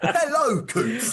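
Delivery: very high, condescending, patronising tone. Showing how a co-host reads out replies: imitating Mark, very patronising. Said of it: "in a very patronising tone?".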